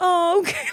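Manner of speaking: acted-out, very high, deflated, sad voice. Retelling someone's reply when pulled away from helping: imitating a sad reply. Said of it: "so sad".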